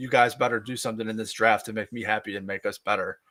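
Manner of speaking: normal talking voice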